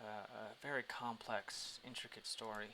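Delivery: openly, heavily sarcastic tone.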